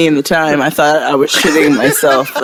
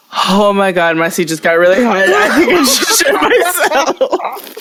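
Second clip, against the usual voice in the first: acted, alarmed sudden panic, swooping and rising voice; 6 semitones higher than usual. Retelling sitting on a hot car seat: retelling own panic. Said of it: "And I'm panicking".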